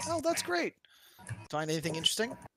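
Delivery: cheerful video game NPC voice.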